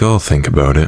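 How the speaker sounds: ordinary talk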